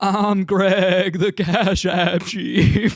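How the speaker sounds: very slow, loud cartoon sheep voice. Showing how the character talks, the speaker does his catchphrase; Greg the Cash App Sheep voice. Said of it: "he kind of talks like this, like he has to do this sort of um intonation".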